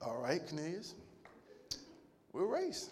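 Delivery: very quiet, breathy, hushed, humble, unbothered stoic calm. Retelling how a church brother accepted Cornelius's race challenge, imitating Brother Kason, humble, quiet, stoic. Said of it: "in his humble, quiet, stoic voice".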